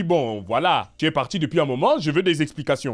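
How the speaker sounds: harsh angry uncle voice. Advising a listener how to confront someone, speaker uses a harsh angry uncle voice. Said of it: "une voix un peu, un peu dure, de tonton en colère".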